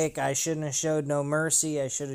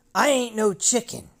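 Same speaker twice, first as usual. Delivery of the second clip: high, put-on angry, offended, indignant tone; 6 semitones higher, 4 dB louder than usual. Retelling a movie scene after being called chicken: imitating an angry Marty McFly. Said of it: "getting all fucking pissed off about it and going".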